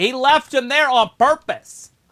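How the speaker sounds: very high, very loud, heated angry yell. Reacting to what Carlito just did, yelling at him. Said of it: "why are we yelling at him?".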